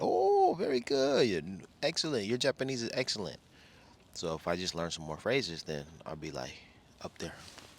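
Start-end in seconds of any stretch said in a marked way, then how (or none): 0.0-3.4 put-on very high, excited, gushing teen girl voice. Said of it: "they were excited".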